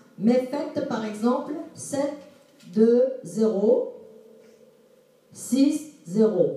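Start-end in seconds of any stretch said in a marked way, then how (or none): 1.8-6.6 each digit spoken separately with short pauses between. Advising how to read out a number: short pauses between digits. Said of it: "marquez une toute petite pause quand il y a le point".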